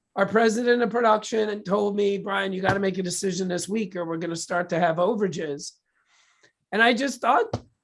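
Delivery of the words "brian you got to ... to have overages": plain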